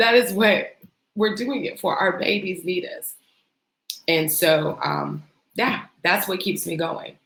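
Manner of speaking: tearful, choked-up talking through tears. Speaker addressing the listeners, crying while speaking. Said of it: "I'm crying".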